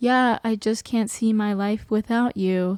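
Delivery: deadpan, flat, emotionless monotone delivery. Imitating Meredith's line to him: imitating a flat, emotionless delivery. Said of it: "said with so little emotion".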